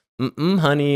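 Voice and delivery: put-on thick Southern drawl. Imitating a friend's mother at the reunion: imitating a thick Southern accent. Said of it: "she's from the South, too, has a crazy thick accent".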